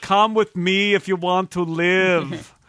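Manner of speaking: put-on slow robot voice with Austrian accent. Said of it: "speaks in an Austrian accent".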